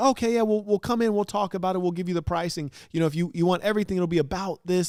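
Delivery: mock nervous, jittery talk. Retelling what the person on the phone said about pricing: imitating someone nervous. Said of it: "they said it like they were nervous".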